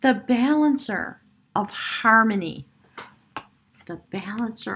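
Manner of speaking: slow, choked-up voice catching with emotion. Reading tarot cards for a Capricorn, the speaker is getting choked up. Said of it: "I'm getting choked up again".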